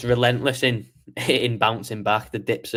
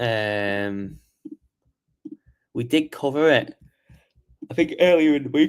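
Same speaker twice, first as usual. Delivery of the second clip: yawning while speaking, slower; 3 semitones higher than usual. Host recapping earlier coverage for the audience, yawning while speaking. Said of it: "excuse me, sorry, yawning".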